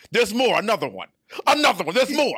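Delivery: loud, brash, clowning, provocative delivery full of swagger. Retelling the clowning of a player's worst moments: loud boisterous Stephen A. Smith voice. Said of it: "as only Stephen A Smith can do in his provocative, loud bravado, boisterous voice".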